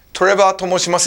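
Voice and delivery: ordinary talk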